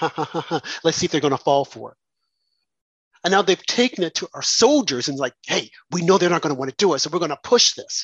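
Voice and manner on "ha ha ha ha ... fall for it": put-on snickering laugh. A speaker acts out how a man on TV probably snickered, mock snickering. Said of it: "he was probably snickering and saying".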